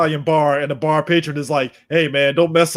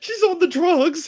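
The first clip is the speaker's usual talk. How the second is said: mock tearful pleading, higher. Retelling a scene's plea for help: imitating someone crying. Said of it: "sitting up there crying like".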